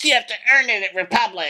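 very high, persnickety church lady voice. Imitating T J, likened to Dana Carvey as the church lady. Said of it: "Dana Carvey playing the church lady".

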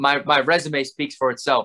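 ordinary talk, nothing marked

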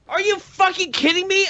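incredulous yell, pitched high in disbelief.

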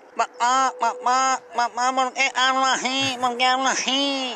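nasal, nasally voice. Telling a joke, the boy asking his mother again: nasal voice. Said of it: "estaba gangoso".

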